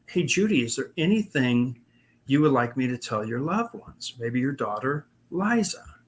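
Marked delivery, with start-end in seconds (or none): none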